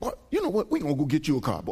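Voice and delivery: put-on old man voice, Southern US dialect, swooping pitch.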